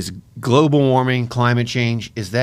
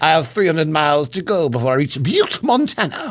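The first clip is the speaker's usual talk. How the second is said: put-on old-fashioned Victorian British accent, pitched up; 5 semitones higher than usual. Joking about how truck drivers talk, in a mock Victorian British voice. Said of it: "just Victorian British guys".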